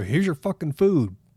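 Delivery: rude, curt fast-food worker voice. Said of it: "they go".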